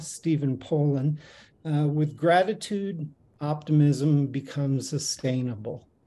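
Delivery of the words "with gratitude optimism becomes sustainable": ordinary talk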